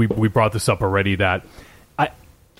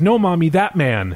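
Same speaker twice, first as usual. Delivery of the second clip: put-on high little-girl voice; 7 semitones higher than usual. Recalling a jump scare from the film: imitating the girl in the film. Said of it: "she goes".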